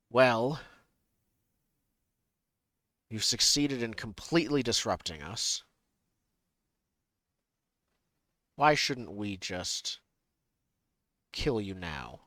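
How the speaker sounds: authoritative, commanding voice of a commander. Voicing a commander who addresses the adventurers from above, commanding voice from above. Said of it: "You hear a commanding voice from above".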